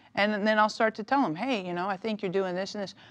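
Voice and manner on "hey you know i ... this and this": plain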